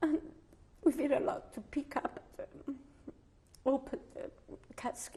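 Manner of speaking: speaking through tears. Recalling a family burial, the speaker talks while crying.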